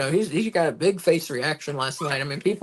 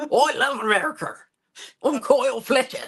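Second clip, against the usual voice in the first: put-on Australian accent, pitched much higher; 9 semitones higher than usual. Recounting Kyle Fletcher's speech, the speaker does a Kyle Fletcher impression in an Australian accent. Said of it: "let me break out my real Australian accent".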